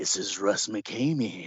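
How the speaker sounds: low, slow, creepy voice. Retelling how a man called at midnight and introduced himself, in Russ McKamey's creepy voice. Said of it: "he puts on a creepy voice".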